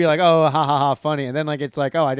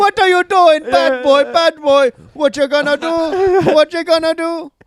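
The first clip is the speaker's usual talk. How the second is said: loud, very high, bad fake Jamaican accent; 12 semitones higher, 6 dB louder than usual. Redoing the accent that people from Jamaica called bad, in a bad Jamaican accent. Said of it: "bad accent".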